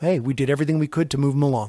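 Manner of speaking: normal talking voice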